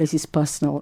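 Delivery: ordinary talk, nothing marked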